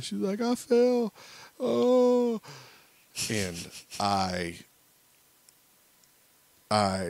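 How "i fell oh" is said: very high tearful crying, long drawn-out "oh". Retelling a daughter's words after a fall in the shower: imitating someone crying. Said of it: "and she's crying".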